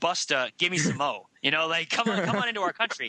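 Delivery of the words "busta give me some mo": mock-firm, put-on stern judge voice. Speaker acts out what the court said; mock-firm bewigged judge voice. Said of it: "with a firm, bewigged voice".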